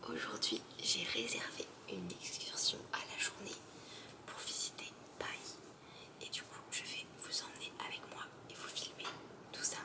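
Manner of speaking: barely voiced, very quiet, soft whisper. Starting a day-trip video early in the morning with neighbours asleep, whispering. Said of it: "Je chuchote".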